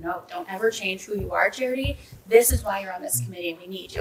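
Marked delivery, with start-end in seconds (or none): none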